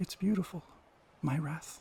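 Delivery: soft, delicate, feminine tone of voice. After the figures vanish into darkness, a voice rings out again, delicate and feminine. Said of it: "this time much more delicate and feminine".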